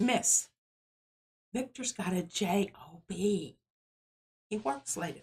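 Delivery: hushed, confiding stage whisper under the breath. Retelling what a student said beside a sleeping classmate, imitating a student half-whispering. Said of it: "And she whispers".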